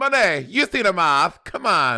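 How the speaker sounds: insistent Italian mama voice. Teasing the other speaker by repeating them like some italian mama. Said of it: "you sound like some Italian mama".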